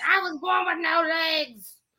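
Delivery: high, held-back yelp. Describing a scene, the speaker acts out a legless man yelling at a guy: retelling a yell. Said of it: "started yelling at the guy".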